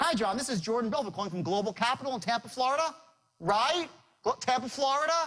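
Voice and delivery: rising pitch on Florida at phrase ends. Demonstrating a sales call to show a micro agreement: rising pitch at line ends. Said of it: "by raising up my voice at the end".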